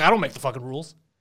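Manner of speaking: ordinary talk, nothing marked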